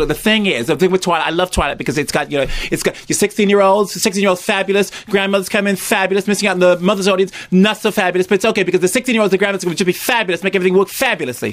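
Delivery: high, camp American executive voice. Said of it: "an American executive talking like this".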